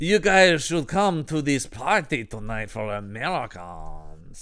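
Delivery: outrageous, awful put-on French accent. Retelling Claude's party invitation to the group, in Claude's awful French accent. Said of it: "give this guy a awful French accent".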